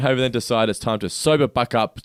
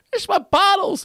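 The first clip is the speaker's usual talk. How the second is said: put-on old man voice, higher; 3 dB louder than usual. Retelling a shooting-game bonus round, voicing the old guy: imitating an old man's voice. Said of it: "that's exactly what the voice was like".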